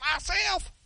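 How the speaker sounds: high, mocking imitation of a shout. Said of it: "don't go".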